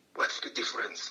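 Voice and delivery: imitated whisper. Retelling a question to a fellow student in class: retelling a whisper. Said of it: "to whisper to one of the students".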